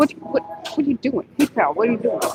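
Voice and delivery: acted Staten Island accent, arguing tone. Retelling a YouTuber's skit of friends arguing over food: imitating him. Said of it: "I'm imitating him".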